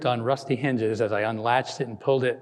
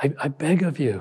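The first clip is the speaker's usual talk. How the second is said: quivering, trembling voice; 3 semitones higher than usual. A narrator reads a husband begging shelter for his laboring wife: quivering voice. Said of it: "the husband's voice quivered".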